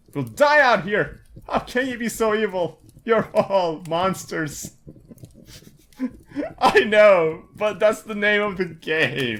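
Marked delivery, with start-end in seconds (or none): 0.2-4.8 desperate, despairing, accusing tone. A starving mother refused at the door accuses those inside, despairing, accusing mother. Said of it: "Hello, my name is [name], and this is my son [name]. / Let me in, I know someone who's in there. Please, we're starving. / Mommy? What's happening? Is no one there? I don't know, sweetie. I'm just".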